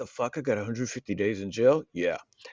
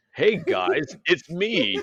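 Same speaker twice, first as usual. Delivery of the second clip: weird, stilted, awkward dubbed voice, higher; 6 semitones higher than usual. Joking about dubbed porn voice acting, in weird dubbed voice acting. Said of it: "that weird ass voice acting".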